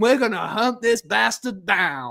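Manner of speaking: put-on, angry, fierce, tough-guy Southern accent. Describing a film, imitating the scientist's father, in an aggressive southern accent. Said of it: "like the most aggressive southern".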